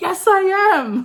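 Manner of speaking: thrilled, very high, blurted-out excited shout. Retelling a reply to someone who recognized the speaker: imitating own excited shout.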